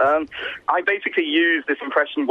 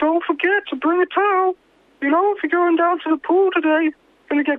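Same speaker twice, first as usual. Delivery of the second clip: put-on cartoon voice, much higher pitch. Told to go on after offering an impression, South Park character impression. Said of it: "I can do an impression from South Park".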